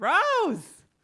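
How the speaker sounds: loud, high-pitched call.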